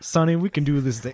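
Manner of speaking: put-on heavy, laid-on rural Southern US accent. Discussing an action comedy movie, imitate its actor, Billy Zane with a redneck accent. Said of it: "Billy Zane with the redneck accent".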